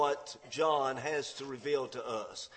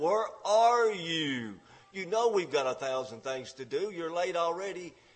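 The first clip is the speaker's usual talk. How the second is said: mock, furious, shrieking scream; 3 semitones higher than usual. Speaker retells a woman screaming at her late husband over the phone; retelling a scream. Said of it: "she screams into the phone".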